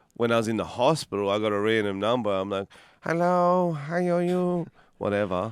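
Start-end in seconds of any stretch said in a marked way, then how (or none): 3.0-4.7 very slow, high, flat, silly put-on funny voice. Retelling answering a call from a random number: own put-on funny voice. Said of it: "so I do a funny voice".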